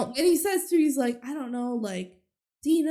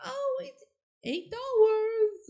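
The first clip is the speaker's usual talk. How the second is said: put-on very high, very drawn-out little girl voice; 9 semitones higher than usual. Retelling how a girl sells muffins: put-on little girl voice. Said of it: "pretending to be a little, little girl".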